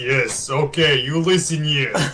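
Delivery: put-on heavily laid-on Russian accent. Voicing a dragon character, in a Putin voice. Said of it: "so it went from being Leonid to being Putin".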